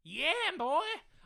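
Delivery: shrill, very high, very loud silly cartoon chicken voice. Answering a viewer's question about cow and chicken, in a silly chicken voice. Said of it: "Don't know what that voice was".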